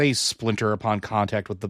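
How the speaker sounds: plain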